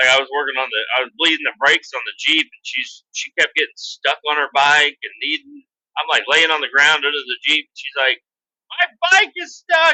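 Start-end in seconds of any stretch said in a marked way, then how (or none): 8.7-10.0 put-on very high screaming little kid voice. Speaker working on the Jeep retells how she screamed at them, imitating her screaming. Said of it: "she's like screaming at me".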